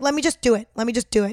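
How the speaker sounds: put-on rude, impatient scolding tone. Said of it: "So rude".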